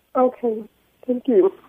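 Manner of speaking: very hurt, near tears. Thanking someone after their advice, sounding very hurt. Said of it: "You sound like you're very hurt".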